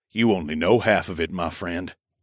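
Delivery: ordinary delivery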